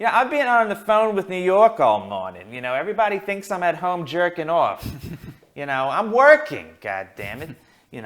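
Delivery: put-on belted out high and animated, Brooklyn accent.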